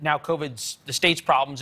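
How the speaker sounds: plain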